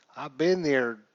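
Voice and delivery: loud, laid-on Southern US accent. Repeating a line in a Southern American accent while chatting about a game. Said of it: "Man, that sounded Southern".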